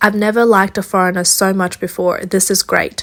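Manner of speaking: usual speaking voice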